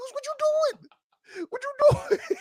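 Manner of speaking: shrill, very high, loud screaming outburst. Retelling screaming at the TV during a game: retelling screaming at the TV. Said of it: "I literally screamed at my T V".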